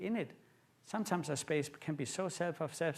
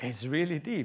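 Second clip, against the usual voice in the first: put-on, acted-out gasp; 5 dB louder than usual. Retelling looking down from a rim at a waterfall, retelling a gasp.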